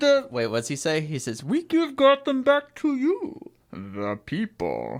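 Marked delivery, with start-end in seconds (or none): 1.4-5.0 horrible voice swooping very high, dragged very slow. Quoting a movie line, then calling the voice horrible: horrible Bane voice. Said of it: "my Bane voice is horrible".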